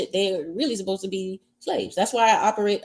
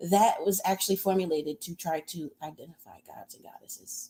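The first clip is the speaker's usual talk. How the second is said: hushed, secretive half-whispered voice; 3 semitones lower, 5 dB quieter than usual. Telling listeners about something the speaker can't discuss on here, half-whispering. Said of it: "I'm whispering".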